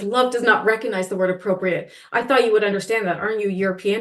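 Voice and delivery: ordinary talk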